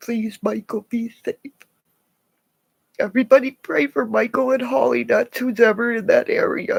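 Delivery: crying through every word. Asking everyone to pray for people in the area, crying. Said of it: "I'm sorry I'm crying".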